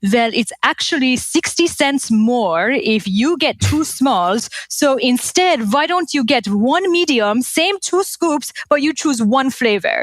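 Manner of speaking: high fake Persian accent. Retelling an ice cream outing, the speaker quotes their dad, imitating a Persian accent. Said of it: "in his Persian accent".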